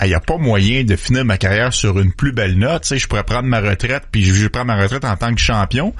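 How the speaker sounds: ordinary talk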